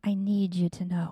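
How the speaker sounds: very gentle, loving voice. Recounting what was said to the speaker, retelling a very gentle, loving voice. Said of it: "he said to me very gently, very lovingly".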